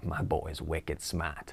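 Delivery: very hushed, quiet, low put-on Boston accent. Describing Will Hunting, quoting his best friend in a Boston accent. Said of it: "says in a Boston accent".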